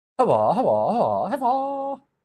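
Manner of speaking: very high, swooping broken-chicken clucking squawk. Attempting a line from a favourite movie, the speaker ends up sounding like a broken chicken. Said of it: "I sound like a freaking broken chicken right now".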